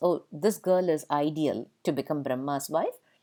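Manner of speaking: normal talking voice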